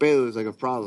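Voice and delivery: normal talking voice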